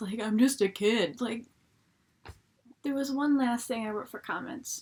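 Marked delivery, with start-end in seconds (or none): 0.2-1.2 louder, deep-voiced grown man voice. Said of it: "this guy with, like, this deep voice".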